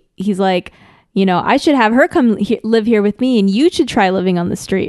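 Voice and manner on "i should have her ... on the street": usual speaking voice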